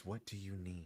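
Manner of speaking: soft, tender, kind and gentle voice. Storyteller voicing a presence echoing in a character's mind, kind gentle voice. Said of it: "it's a gentle voice".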